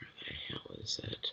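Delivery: soft, unvoiced whisper under the breath.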